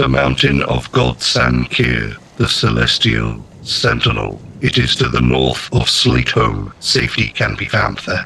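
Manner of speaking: automaton-like, robotic, mechanical machine voice. Narrating a scene, voicing an automaton that answers a question: automaton-like voice. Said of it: "you hear a automaton-like voice say".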